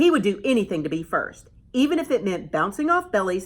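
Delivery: plain reading voice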